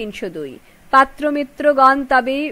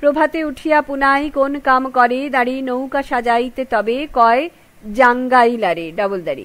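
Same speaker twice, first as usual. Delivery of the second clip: plain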